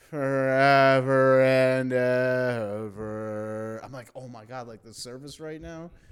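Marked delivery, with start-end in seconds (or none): 0.2-3.8 very loud, booming, flat priestly monotone, ever stretched. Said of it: "they speak in monotone".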